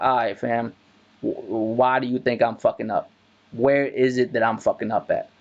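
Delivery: ordinary talk, nothing marked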